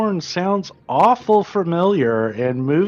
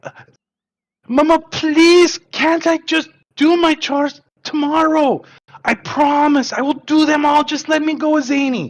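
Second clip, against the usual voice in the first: put-on higher-pitched, begging, pleading child voice; 9 semitones higher than usual. Voicing Bedouin begging Mama to go with Zany: pleading child voice. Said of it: "and he's like".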